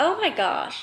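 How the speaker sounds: soft, trembling, quivering voice near tears. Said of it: "my voice is kinda quivering right now 'cause I wanna cry".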